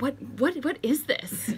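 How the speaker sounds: high-pitched, baffled, incredulous tone.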